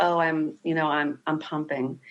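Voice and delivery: subdued, quiet, halting, low-key voice. Retelling answering an aunt about breastfeeding: imitating own quiet answer. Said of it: "quietly said".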